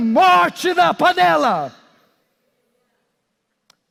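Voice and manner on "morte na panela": loud shouting. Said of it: "alguém está aqui hoje gritando".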